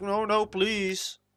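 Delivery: mock tearful, high-pitched, crying pleading voice. Retelling how the game's narrator reacted: imitating the narrator crying. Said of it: "the narrator's crying like".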